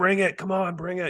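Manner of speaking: put-on frantic, freaked-out, very high shriek. Describing a film scene where a man steps out into the mist; imitating him screaming. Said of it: "He's kind of screaming like".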